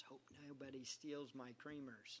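under-breath mutter. Retelling what they said to themselves, under their breath. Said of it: "I said it under my breath".

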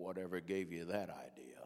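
big, deep, low preacher's voice. Retelling Brother Lowry's reply to the man sitting beside him: Brother Lowry's deep voice. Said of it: "in that deep voice".

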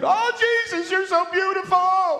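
acted, long, high, wide-open, drawn-out screaming cry. Retelling what Punch said about seeing heaven: imitating Punch screaming. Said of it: "he just starts screaming".

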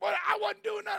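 very high, worked-up, angry voice. Retelling what a pulled-over truck driver said, acting out someone mad. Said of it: "He's all mad at me".

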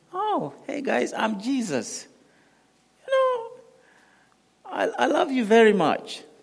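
very high, slow, drawn-out, swooping sing-song parody voice. Mocking what the humanistic gospel makes Jesus say: mocking Jesus impression. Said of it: "Jesus would just".

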